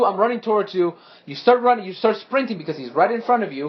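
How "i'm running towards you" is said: normal talking voice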